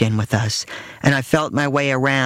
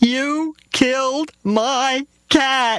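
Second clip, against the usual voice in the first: shrill, very high scream through sobs; 12 semitones higher than usual. A young daughter accuses the narrator's mother, screaming while sobbing. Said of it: "she screamed, sobbing into her mother's skirt".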